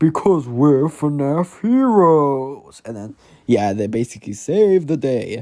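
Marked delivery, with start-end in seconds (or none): 0.0-2.8 very slow animatronic bear voice, "heroes" stretched long. Retelling a story, the speaker redoes a line in Freddy's voice. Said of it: "Let me do it in Freddy's voice".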